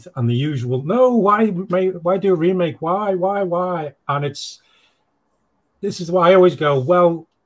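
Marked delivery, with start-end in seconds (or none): 0.8-3.9 very slow, high, drawn-out, mournful wail. Retelling how people reacted to the remake news: imitating people wailing. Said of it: "much wailing and gnashing of teeth".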